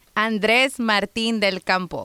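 Spanish-sounding pronunciation. Showing off how to say a name when asked: showing off spanish pronunciation. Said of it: "just showing off".

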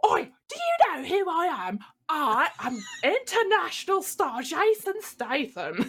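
indignant angry outburst. Retelling a character kicking off in a half-finished suit: mock-angry Jason Statham outburst. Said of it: "So he's kicking off".

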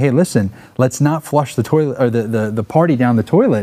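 usual speaking voice

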